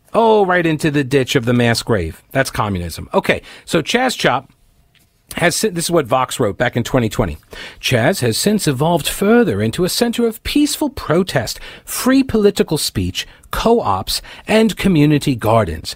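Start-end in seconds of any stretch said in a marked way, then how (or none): 7.8-15.9 loose put-on British accent, reading voice. Speaker reads aloud what Vox wrote in 2020, kind of a British accent. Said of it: "reading this with kind of a British accent".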